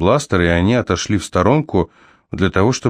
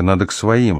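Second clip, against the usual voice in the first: ordinary delivery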